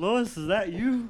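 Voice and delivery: put-on drunk voice. Describing a video of a guy who made fun of the speaker, quoting him: imitating a very drunk man. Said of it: "he's like super drunk".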